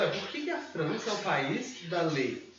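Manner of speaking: ordinary talk, nothing marked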